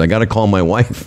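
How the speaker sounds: ordinary talk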